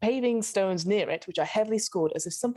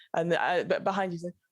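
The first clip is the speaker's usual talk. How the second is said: plain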